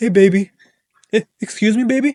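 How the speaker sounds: put-on meek, timid voice. Acting out a buyer going to his wife, in a put-on husband voice. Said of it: "let me put the right voice".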